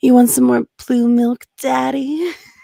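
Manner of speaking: very loud, put-on sexy, sultry voice. Performing a joke line for the others: put-on sexy voice. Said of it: "turn on the sexiest voice I've got".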